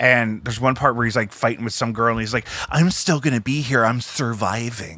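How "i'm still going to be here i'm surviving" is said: slow, syrupy drawl, every word dragged out. Retelling a fight scene where Val emulates how John Holmes talked, syrupy John Holmes voice. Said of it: "he like says "surviving" like that, like he just makes it real syrupy".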